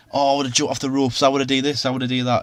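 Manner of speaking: usual speaking voice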